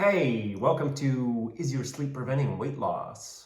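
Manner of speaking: broadcast-style radio DJ announcer voice. Opening the show with a welcome to listeners, in a radio DJ voice. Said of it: "It kind of sounded like a D J there".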